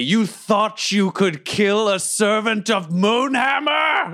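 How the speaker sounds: towering supernatural booming voice, very high-pitched. Holding a goblin by the throat, the player character confronts it: booming empowered voice. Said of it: "my booming, thaumaturgically empowered voice".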